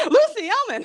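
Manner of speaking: very high shriek. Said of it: "And I shrieked".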